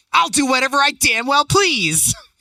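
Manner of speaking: put-on very high-pitched yelling. Retelling how a passenger yells back at him: imitating someone yelling back. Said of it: "she yells back".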